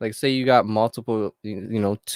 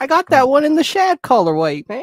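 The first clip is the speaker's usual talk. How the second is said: put-on mock voice, higher and louder; 8 dB louder than usual.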